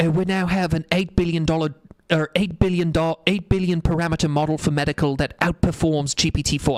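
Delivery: put-on British accent. Quoting a podcast guest's claim about a medical model: imitating Emad Mostaque's British accent. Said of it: "in his little British accent, and he said".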